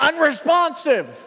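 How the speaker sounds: loud high-pitched yelling. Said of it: "then I yell out".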